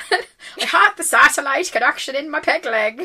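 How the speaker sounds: bad put-on pirate voice sliding far into Irish. Continuing a pirate bit with a co-host; bad pirate voice, sounding irish. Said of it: "equal parts too Irish and terrible Irish".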